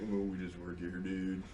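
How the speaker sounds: barely audible, very quiet, deflated sad-sack murmur. Retelling how the shop's teenage workers answered, imitating sad sack teenagers. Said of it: "these just poor, sad sack teenagers like".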